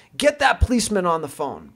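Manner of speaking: play-acted furious voice, high and swooping. Retelling what a guy said to the assistant, retelling a ballistic outburst. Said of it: "guy goes ballistic".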